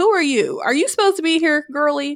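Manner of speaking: put-on cheeky attitude. Describing the sea god's protectors confronting the heroine, mock-sassy. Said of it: "they're real sassy and stuff".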